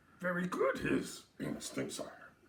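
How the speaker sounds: put-on, odd little creature voice. After a toast to their Italian Yoda, another speaker replies in a Yoda impression. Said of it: "Better than the German accent".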